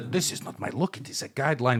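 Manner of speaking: put-on soft German accent sliding into Russian. Playing a character the other speaker calls Führer, German accent drifting Russian. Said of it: "Why am I turning somehow Russian?".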